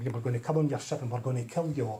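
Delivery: big, heavy, weighty, threatening alien voice. Retelling a Star Trek spoof scene: imitating an alien's big heavy voice. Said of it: "the aliens in the big heavy voices saying".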